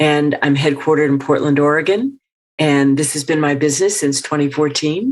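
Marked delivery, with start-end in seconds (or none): 2.6-5.1 statement ending with rising lilt on fourteen. Asked for an upspeak example, the voice rises on fourteen. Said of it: "her voice goes up".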